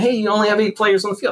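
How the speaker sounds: put-on high, loud, complaining yell. Retelling what the parents yelled during a game: imitating parents yelling. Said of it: "the parents would be yelling".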